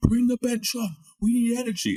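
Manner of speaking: very high, shrill, loud screaming. Retelling a teammate calling for the bench before coming on: imitating a teammate screaming. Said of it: "Gabs was screaming at Craner".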